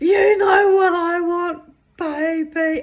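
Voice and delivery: very high-pitched, very loud, drawn-out yell. Telling how you yelled back while dancing wildly among people, retelling your own yell. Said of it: "I yelled back".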